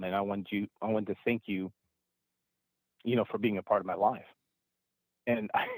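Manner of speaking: choked up, voice catching with emotion. Recounting what a woman said to the speaker, choking up. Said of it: "I'm choking up now".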